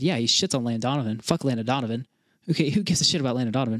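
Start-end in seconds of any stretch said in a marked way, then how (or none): none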